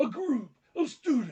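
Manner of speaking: loud, booming voice. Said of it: "My Hulk Hogan voice, but it's serious".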